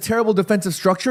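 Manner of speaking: ordinary talk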